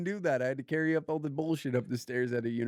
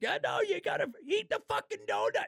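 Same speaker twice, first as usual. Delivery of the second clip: put-on screaming coach voice, higher. Joking about coaching a friend as a food dad: acting out a screaming food dad. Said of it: "screaming at you. I'm like".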